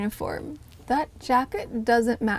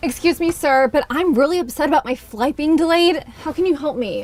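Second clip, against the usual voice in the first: role-played upset voice, high-pitched and raised; 5 semitones higher, 7 dB louder than usual. Role-playing a difficult passenger in a customer service test: upset difficult passenger. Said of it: "would you mind role-playing a difficult passenger?".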